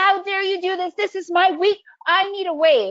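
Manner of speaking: angry rant. Illustrating someone pissed off at Mother Nature, mock screaming in anger. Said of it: "You're not going to scream".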